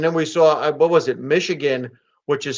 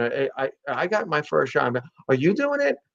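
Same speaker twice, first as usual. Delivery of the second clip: put-on hushed voice, much quieter; 5 dB quieter than usual. Acting out someone quietly asking about the vaccine, imitating a hushed question. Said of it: "like really kind of quiet conversation".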